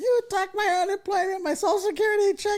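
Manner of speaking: mock very high wailing, sobbing scream. Retelling an old lady's call to a telemarketing job, imitating screaming and crying. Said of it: "she's like screaming, crying".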